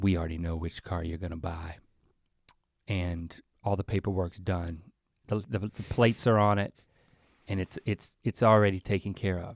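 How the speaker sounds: very quiet, hushed, leaned-in half-whisper. Acting out a salesman who leans over to a buyer: imitating a salesman half-whispering. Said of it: "leans over and whispers in your ear".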